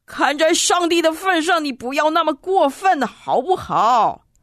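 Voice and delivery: indignant, angry. Narrator voices a traveler protesting to a man taking a cut, angry and indignant. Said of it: "他气愤愤地说".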